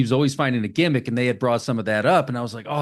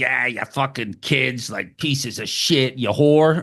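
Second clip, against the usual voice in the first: put-on pissed-off angry old man voice, ranting. Retelling an angry old man insulting kids: imitating an angry old man. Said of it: "the old man's just pissed".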